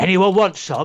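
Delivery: big man calling out loudly. Retelling a comedy bit about a big guy at a football game: imitating a big guy at a football game. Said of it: "the big guy who stands up and goes".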